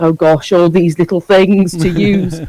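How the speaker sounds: usual speaking voice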